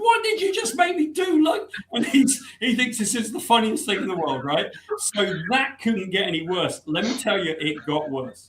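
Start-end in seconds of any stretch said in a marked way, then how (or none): 0.0-1.4 mock shrill, high, upset shout. Speaker retells running back after squeaking and yelling at the one who caused it; retelling a yell. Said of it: "I start yelling at Sienkiewicz".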